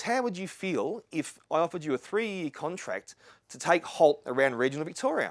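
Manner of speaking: ordinary talk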